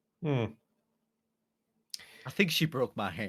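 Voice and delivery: fighting back tears, on the edge of crying. An injured character speaks to the one who will check their hand; holding back tears. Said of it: "I'm really trying not to cry".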